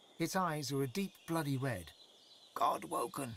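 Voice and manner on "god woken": croaking raven-like bird voice. Game narrator voices a raven taking to the air, croaking raven voice. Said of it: "It croaks as it takes to the air".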